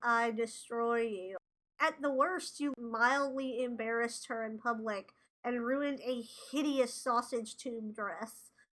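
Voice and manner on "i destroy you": mock deadpan delivery, slower. Recapping an episode, quoting a character's threat to Gretchen, mock-deadpan. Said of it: "very deadpan is".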